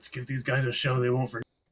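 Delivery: muttering quietly to himself, an aside. Voicing a character rushing into the stadium: muttering under his breath. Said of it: "Kyrak mutters under his breath".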